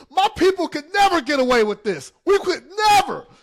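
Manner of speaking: high screaming. Retelling ducking out of sight while the others laughed, retelling a scream. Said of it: "I just screamed".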